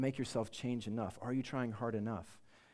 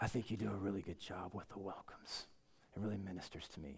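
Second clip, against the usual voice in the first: low, quiet grisly voice, gruffly worn but not gravelly; 5 semitones lower, 6 dB quieter than usual. Speaker quoting a man he drove from the airport to the hotel, grisly voice. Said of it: "in his grisly voice".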